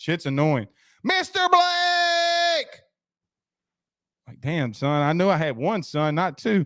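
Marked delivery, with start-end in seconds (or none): 1.0-2.8 acted very high scream, name drawn out. Retelling how someone kept calling out his name: imitating Zach screaming. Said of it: "screaming and shit".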